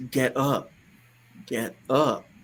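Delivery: mock, very slow, drawn-out commanding authority voice. Retelling what a man in a vision told him: imitating an authoritative voice. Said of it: "In this authority voice".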